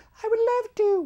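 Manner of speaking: put-on very high, posh, royal-sounding British accent. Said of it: "in that British accent, like the Queen".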